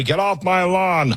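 put-on grumpy old-man grumble. Admitting to sounding old-fashioned: imitating a grumpy old guy. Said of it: "I sound like the old guy".

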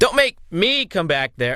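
weak voice trying to sound tough and falling short.

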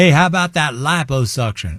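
Texan way of talking. Quoting guys from Texas, in a Texas accent. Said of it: "with that accent".

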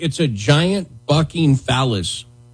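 very slow, deliberate, word-by-word delivery. A speaker telling a story about a bar being sued, said very slowly. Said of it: "I had to say that slowly".

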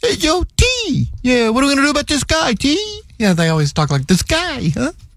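bad fake New Jersey accent. Mentioning James Gandolfini's birthday, imitating how they talk to T; bad New Jersey accent. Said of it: "you don't sound at all like you're from Jersey".

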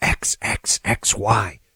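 soft, hushed whisper, breathed close.

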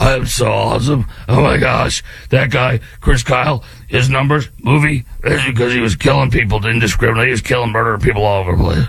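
put-on voice with gravel laid into it. Mocking a critic of Chris Kyle: imitating Graham Plattner's gravelly voice. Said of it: "in your gravelly voice".

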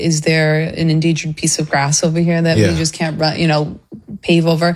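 ordinary talk

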